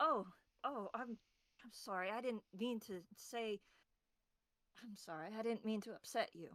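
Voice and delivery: startled and sorry-sounding voice. Playing a tabletop game character who catches another's anxious thought, startled apology. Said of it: "ears jolting upwards of".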